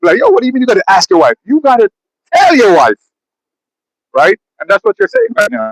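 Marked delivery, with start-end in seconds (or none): 0.2-3.0 scoffing, mocking, laughing disbelief. Retelling how a guy laughed at another man: imitating someone laughing at him. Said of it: "the guy's laughing at him".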